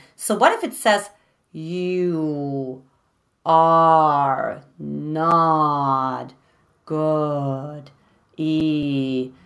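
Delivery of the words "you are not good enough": very slow, very low, halting delivery. Showing what happens when a voice is slowed down, slowed-down voice. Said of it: "what would happen if you slow it down".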